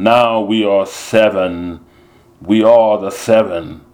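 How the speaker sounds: slow, loud lion roar, "seven" stretched out. Facing the enemy with friends, Dice roars in a lion's voice. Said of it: "in that lion's voice, Dice roared".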